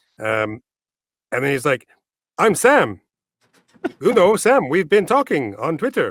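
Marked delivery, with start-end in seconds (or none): 2.4-6.1 clumsy put-on Swedish accent, high and swooping. Retell how a man from Twitter introduced himself to you, as Sam in a very poor Swedish accent. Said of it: "I'm doing a very, very poor Swedish accent".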